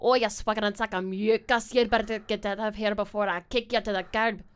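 put-on loud Scottish accent, brash and mouthy. After rehearsals, the speaker rants at the group: scottish accent. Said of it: "talk shit in a Scottish accent".

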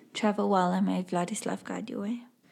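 soft, hushed half-whisper, close to the ear. Player describes her character's hand on a crew member's chest, half-whispering. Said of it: "she's going to whisper".

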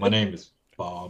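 deep masculine voiceover narration voice. Joking about a narrator voiceover, speaker uses a nice deep masculine voice. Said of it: "Like nice deep masculine voice".

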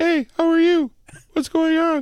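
very high, put-on girly voice. Showing that anyone can try it, doing best girl voice. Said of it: "do their best girl voice".

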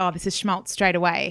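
ordinary delivery

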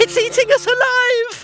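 very high-pitched wailing cry. Audiobook narrator voicing Jamie's line, wailing. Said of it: "Wailed Jamie".

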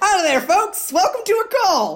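hollered, very high-pitched, loud shout. A man in a cowboy hat shouts down to the players, Country Griffin shouting. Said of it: "the man shouts down to you".

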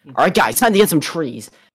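put-on hyperactive, over-eager streamer hype voice. Retelling how random streamers talked on their streams, imitating a hyper YouTuber voice. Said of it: "they put on the YouTuber voice too".

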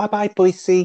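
very camp, very high voice. Recounting how Dale turns around as they're leaving: Dale's very camp voice. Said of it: "in a very camp voice".

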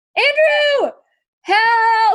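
mock very high, loud, drawn-out yell. Retelling calling to Andrew from the bathroom, retelling a yell. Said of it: "and I yelled".

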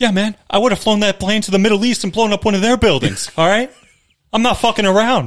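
high voice with a slight Boston accent. Joking about being on a hijacked flight: Mark Wahlberg voice. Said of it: "Mark Wahlberg".

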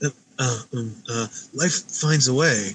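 slow, deliberate, measured delivery. Asked for an impression, doing the one line everyone knows: Jeff Goldblum impression. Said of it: "I wanna hear your best Jeff Goldblum impression".

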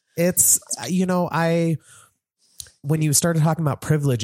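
high, emotional, teary, choked-up voice.

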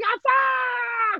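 mock kids' yelling, very high, "ah" drawn out long. Retelling the kids upstairs cursing at each other: imitating kids yelling. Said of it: "And they're just yelling".

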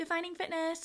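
teasing, derisive put-on tone. Recalling people roasting the speaker for trying to be an influencer, imitating a mocking voice. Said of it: "say it in a voice that was just like literally mocking what I do".

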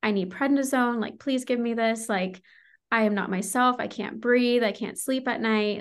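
desperate, begging, pleading voice. Recounting calling the doctor while suddenly very sick, retelling a desperate plea. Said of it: "I was completely desperate".

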